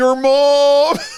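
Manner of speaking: put-on very high, self-assured American accent, mom stretched. Retelling a kid's punchline to a man, imitating a confident American accent. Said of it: "such confidence and such an American accent".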